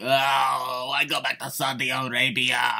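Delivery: put-on very stretched Italian accent. Voicing what many people say about WWE returning to Saudi Arabia: Italian-sounding accent. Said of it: "I don't know why I did that accent".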